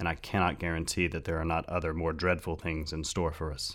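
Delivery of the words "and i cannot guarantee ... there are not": plain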